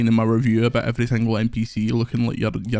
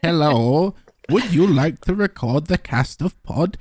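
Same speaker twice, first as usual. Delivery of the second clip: put-on pitched-up, quaint, broken old-world English; 6 semitones higher than usual. Podcast host announces he'll talk in weird, broken, oldie English from now on. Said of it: "talk in weird, broken, oldie, worldy English".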